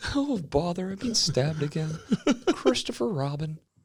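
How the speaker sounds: very high, swooping, sing-song cartoon bear voice. Joking about a hurt bear, speaking as Winnie the Pooh. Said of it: "Just fucking Pooh Bear crying".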